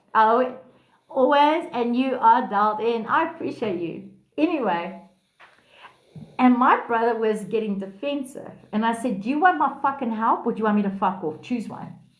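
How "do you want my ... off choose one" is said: very harsh, cutting, blunt, no-nonsense tone. Retelling what was said to a defensive brother: imitating own harsh tone. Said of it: "very harsh with him".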